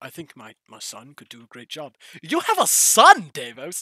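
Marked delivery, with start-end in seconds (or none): 0.0-1.9 aged voice, very low, very quiet murmur. Asked who else could run the place, Davos answers in an elderly character voice. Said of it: "[name] is like 80".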